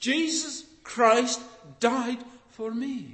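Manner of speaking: mock wonder and astonishment, awed delivery. Speaker repeats an apostle's words to listeners: quoting with awe. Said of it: "He says it with awe".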